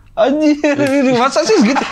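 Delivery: very high, lively, drawn-out fake excitement. Acting out the reaction expected to someone's story, a mock-excited reaction. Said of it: "gue mesti excited kayak gitu".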